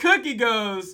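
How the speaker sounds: usual speaking voice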